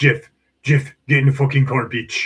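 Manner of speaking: put-on Slovak-accented speech. Retelling a friend urging him into the car: Martin impression, Slovakian accent. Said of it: "Best Martin impression".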